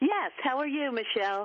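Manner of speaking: cheerful lively tone. A caller greets the host after being welcomed, happy, vibrant tone. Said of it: "you've got a very happy, vibrant tone".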